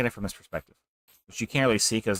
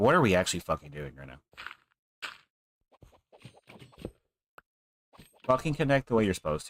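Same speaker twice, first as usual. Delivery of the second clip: mildly irritated, running out of patience; 4 semitones lower than usual. Complaining about how pieces are placed while building in a game: a little aggravated. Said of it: "I'm getting a little aggravated".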